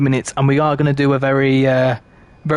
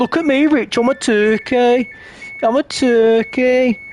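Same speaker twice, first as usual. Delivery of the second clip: put-on thick child Brummie accent, very high, very slow; 10 semitones higher than usual. Retelling a five-year-old with a glove on his head: imitating a child's thick Brummie accent. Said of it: "he developed such a little thick Brummie accent".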